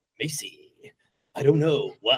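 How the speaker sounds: epic, dramatic movie trailer narrator voice. Retelling a line from a rehearsal on Zoom: imitating a movie trailer voice. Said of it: "just do the movie trailer voice".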